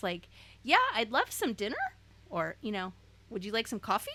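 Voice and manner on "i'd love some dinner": "dinner" said with a rising, lifted tune. Recalling a past habit of going up at sentence ends, rising at end of dinner. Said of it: "I would go up in my tone at the end of every sentence".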